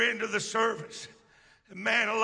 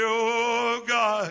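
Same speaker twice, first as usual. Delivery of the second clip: put-on deep, prayer-like voice; 5 dB louder than usual. Recalling learning to pray in church, the speaker is imitating Brother Puckett's deep voice. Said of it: "he had a deep voice".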